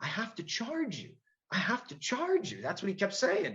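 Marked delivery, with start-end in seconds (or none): 0.0-2.6 mild, gentle, insistent, soft-spoken, slightly high. Retelling what the officer booking him kept saying: imitating a soft-spoken man. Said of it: "real soft-spoken guy".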